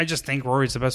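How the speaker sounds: plain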